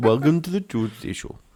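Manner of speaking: put-on Indian accent. Trying out different accents on the show's greeting: indian accent.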